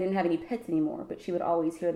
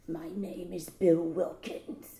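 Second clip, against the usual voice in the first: very slow, eerie possessed voice, gurgling as through water; 5 dB quieter than usual. Retelling a movie scene where the girl speaks: imitating a creepy possessed voice. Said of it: "that was really creepy".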